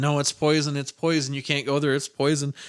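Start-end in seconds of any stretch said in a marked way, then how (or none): none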